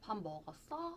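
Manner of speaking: strong upward swoop at the end of 먹었어. Imitating how the speaker's mom raises sentence endings: strong rise on 먹었어. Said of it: "우리 엄마는 어미를 되게 많이 올리나 보다".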